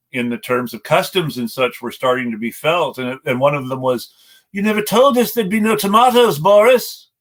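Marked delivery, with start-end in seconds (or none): 4.5-6.9 put-on British accent, pitched up. Quoting a complaint about Brexit in a put-on British accent. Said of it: "please forgive my British accent here".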